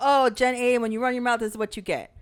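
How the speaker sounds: ordinary talk, nothing marked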